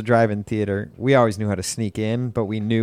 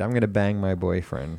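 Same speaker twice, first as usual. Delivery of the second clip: ordinary talk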